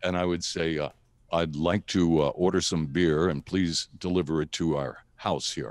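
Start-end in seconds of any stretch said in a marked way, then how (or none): 1.3-5.7 put-on deep manly radio voice, much lower. Retelling phoning in a beer order as a teen, in a deep radio voice. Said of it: "use my deep radio".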